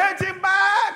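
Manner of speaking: slow, high mocking shout.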